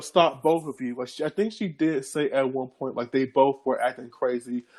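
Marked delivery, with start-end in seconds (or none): none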